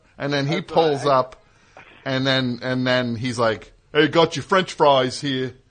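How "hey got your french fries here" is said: put-on strong, thick New York accent. Retelling how a man pulls up with the French fries; thick New York accent. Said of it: "he's like got the most New York accent of anybody ever".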